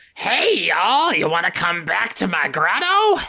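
witch-like hag character voice with a southern swamp sound. Announcing a character bit to the others, southern swamp hag voice. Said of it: "Southern Swamp Hag".

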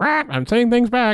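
very high-pitched parrot-like squawk. Imitating Iago in the animated film: Iago acting like a parrot. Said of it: "he's acting like a parrot".

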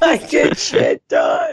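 put-on high, slow drunken yell.

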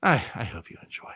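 put-on defeated voice. Retelling how he signed off the show: imitating sounding defeated. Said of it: "you sound defeated when you get to the end".

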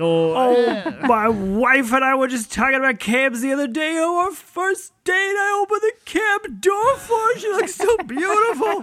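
fake sobbing. Playing Joe Prado remembering a first date with his wife, mock crying. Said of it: "Joe, you gotta stop crying".

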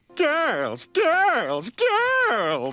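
over-the-top tipsy shriek, very high, loud, swooping. Showing how a woman's voice sounded, doing an exaggerated tipsy Charlotte Rae impression. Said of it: "that's my impersonation of".

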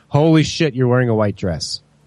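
heavy acted sarcasm with laid-on surprise. Retelling his reaction when the bride showed the dress: very sarcastic. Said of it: "to be as sarcastic as possible".

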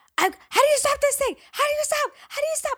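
very high, loud, frantic panicked screaming. Retelling a girl sliding down the kitty slope toward them, retelling a girl's screaming. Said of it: "Like screaming, freaking out".

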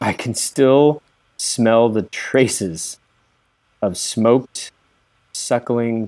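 deliberate, unhurried, very slow and drawn out. Greeting the gentlemen in character, speaking very slowly. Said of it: "and I'm speaking very slowly".

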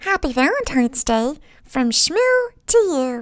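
silly, high-pitched put-on cartoon voice. Sharing a cartoon voice for a Valentine's greeting, put-on cartoon voice. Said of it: "your cartoon voice. ... she's already speaking in her Shmoopy voice, so I'll share mine".

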